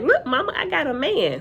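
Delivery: proud, excited bragging. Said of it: "And she was like".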